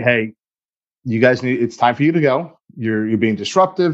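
ordinary talk

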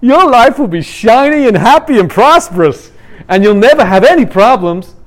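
put-on American accent. Summing up a false Christianity message presented here, in an American accent. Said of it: "Sorry, I shouldn't do American accent".

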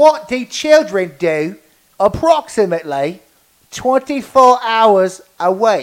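put-on annoying British accent. Re-asking the question in an annoying British voice. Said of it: "I'll ask the question again in an annoying British voice".

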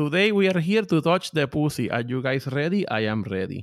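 rapid broken English. Explaining they now talk this way all the time, speaking fast broken English. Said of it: "I could speak faster in broken english".

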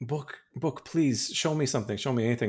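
put-on, desperate begging plea, over and over. Retelling a scene where Winifred begs the book, imitating Winifred pleading. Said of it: "she's pleading".

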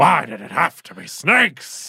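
very loud, high-pitched outburst, belted out. Doing an impression while joking about snakes: Al Pacino impression. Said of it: "That's Al Pacino".

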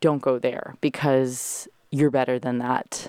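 ordinary delivery

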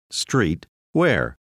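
normal talking voice

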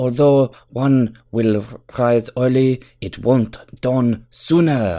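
fake Japanese accent. Speaker gives the spanish version of a saying, in a put-on accent that sounds japanese. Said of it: "You sound Japanese".

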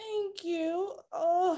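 choked up, voice catching, about to cry. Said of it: "gonna cry right now".

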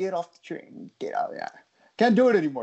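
put-on whispered, hushed New York accent. Chatting about how New Yorkers talk, demonstrating a New York accent. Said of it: "like the New York accent".

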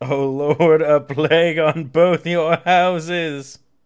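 very dramatic, theatrical, loud, drawn-out scream. Retelling a dying character's last words: imitating a dramatic scream. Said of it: "He screams it very dramatically".

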